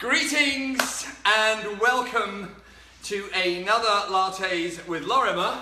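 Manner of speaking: loud, winded, puffing, out of breath. Host opening another episode of lattes with lorimer, out of breath. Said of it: "I am out of breath officially".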